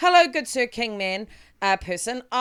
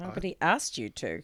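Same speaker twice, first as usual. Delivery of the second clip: low, soft murmur under the breath; 4 semitones lower, 8 dB quieter than usual. Player speaking in character after another character's remark, murmured to self. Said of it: "I just murmur that to myself".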